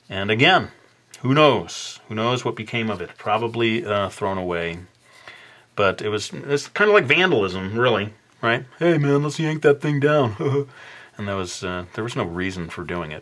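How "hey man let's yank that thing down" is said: mocking put-on voice, pitched higher. Recalling people who tore down the speaker's banner: imitating the vandals' voice. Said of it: "imitating their voice on this video".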